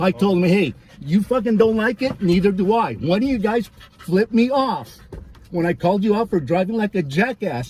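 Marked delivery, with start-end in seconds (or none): none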